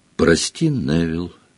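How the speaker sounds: quiet, soft, hushed, low-key delivery. A girl apologizes to a boy before raising her wand, speaking quietly. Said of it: "негромко сказала она".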